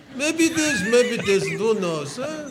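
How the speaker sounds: put-on slight Yiddish accent. Telling a story and quoting the richest man in the valley; slight Yiddish accent. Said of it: "He has a little bit of a Yiddish accent".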